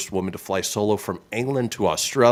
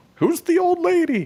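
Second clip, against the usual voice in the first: high, mock puzzled fan voice. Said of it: "everybody's like".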